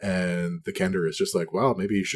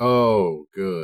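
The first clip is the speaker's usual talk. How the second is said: very exasperated, fed up, raised voice; 6 dB louder than usual. As the mom in your story, reacting when her child comes back: exasperated. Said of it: "Just like very exasperated".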